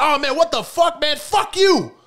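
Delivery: very high, shrill, loud yelled outburst. Speaker retelling how people begged for money and got refused: imitating someone screaming. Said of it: "literally screaming at motherfuckers".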